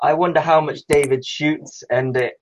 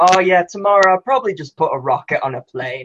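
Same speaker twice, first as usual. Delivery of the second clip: ordinary delivery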